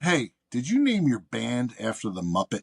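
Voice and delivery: imitated sarcastic tone. Retelling asking a musician a question about his band's name: retelling a sarcastic question. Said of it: "a little bit of a sarcastic question".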